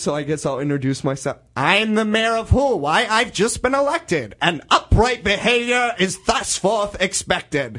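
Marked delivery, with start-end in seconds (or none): 1.6-7.8 little cartoon mayor voice, high and rhythmic. Asked about lines they get to say, introducing the mayor: cartoon mayor voice. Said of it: "I do a little voice".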